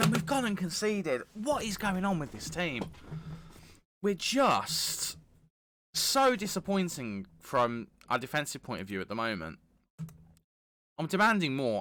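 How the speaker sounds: high, angry, demanding, furious tirade. Reacting to the team conceding a goal in the game: furious. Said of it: "I'm furious with our just absolute lack of care".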